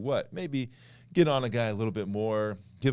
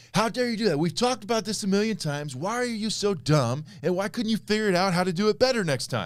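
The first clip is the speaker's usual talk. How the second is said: in-your-face scolding, berating, pitched very high; 10 semitones higher, 4 dB louder than usual. Describing what yelling means, the speaker is imitating someone getting in your face. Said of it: "it's someone getting in your face like".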